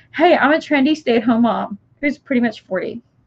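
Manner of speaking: ordinary delivery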